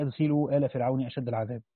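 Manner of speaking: ordinary talk, nothing marked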